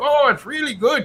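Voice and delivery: heavy put-on Canadian accent, very high pitch. Quoting a man in the Northwest Territories eating beaver: imitating a strong Canadian accent. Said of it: "that strong Canadian accent".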